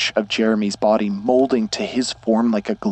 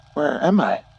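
high, lost, bewildered voice; 5 semitones higher than usual. A boy calls to his father after coming to his senses, quiet and confused. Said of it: "His voice was quiet and confused".

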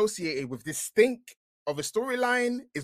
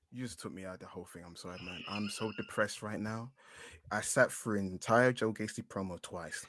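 fake flat, drained monotone, lower and quieter; 10 semitones lower, 10 dB quieter than usual. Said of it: "I lost all enthusiasm in my voice".

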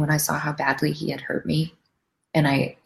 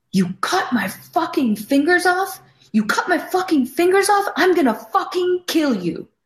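mock pure animal fury, shrill, furious scream; 14 semitones higher than usual. Retelling screaming at a man who cut himself, retelling a furious scream. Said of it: "I start screaming at him".

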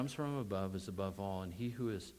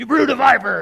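very loud, high, fire-breathing fiery outcry; 12 semitones higher, 22 dB louder than usual. Standing up in front of people to breathe fire: fiery, excited delivery. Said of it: "breathe fire in front of people and say ... I'm using a little voice inflection on purpose".

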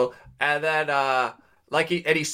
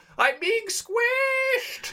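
very high-pitched, squealing yell. Telling how a crowd pushed into a woman, retelling her yell. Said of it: "and then she yelled".

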